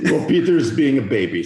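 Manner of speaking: accent from Bulgaria. Repeating a woman's remark for the others, imitating a Bulgarian accent. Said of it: "Can we hear that again?".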